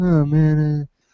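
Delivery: mock bored, flat, level, unexcited drone. Speaker mocking a developer's reply to a compliment, imitating a monotone voice. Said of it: "he's got a monotone voice".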